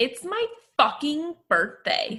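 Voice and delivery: high, swooping, bouncy delivery. Asked to do the honor of a famous quote: imitating Stassi. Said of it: "Would you like to do the honor?".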